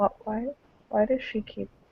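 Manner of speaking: very quiet, soft, hushed, discreet aside. Voicing a character leaning over to ask a friend quietly: said softly. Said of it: "softly say to him".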